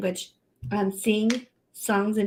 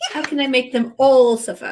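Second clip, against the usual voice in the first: loud, well-done put-on British accent; 4 semitones higher, 8 dB louder than usual. Playing along with a joke about writing a story: British accent. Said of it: "That was a very good British accent then".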